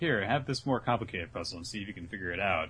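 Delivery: ordinary delivery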